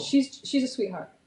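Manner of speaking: normal talking voice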